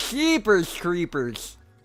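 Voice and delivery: high, dorky, put-on nerd voice. Asked by another speaker to do the nerd voice, saying a short phrase in nerd voice. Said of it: "You gotta do that nerd voice".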